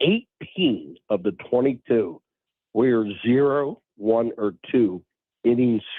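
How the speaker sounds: slow, deliberate delivery. Speaker lays out a game statistic for the others; speaking slowly. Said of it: "I'll say this slowly".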